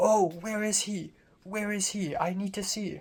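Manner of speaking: high, excited voice. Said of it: "she excitedly was like".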